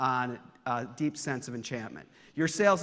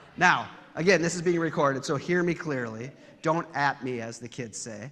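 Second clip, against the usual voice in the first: ordinary talk, nothing marked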